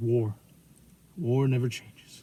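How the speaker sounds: grim, deep, slow, flat droning narrator voice. Quoting the Fallout narration line as Ron Perlman: deep monotone voice.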